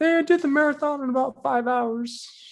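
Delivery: man's voice pitched far too high. Asked if they're doing his voice, the speaker tries it: too-high imitation of a man. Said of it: "No, it's too high".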